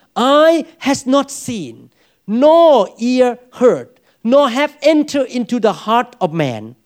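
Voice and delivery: very slow, drawn-out reading, every word stretched out.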